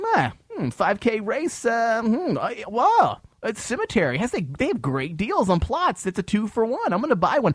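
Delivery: mock gullible, clueless voice, very high and dopey. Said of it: "talk to someone who actually, like".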